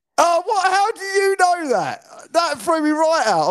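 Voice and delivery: stunned disbelief, squealed way up high.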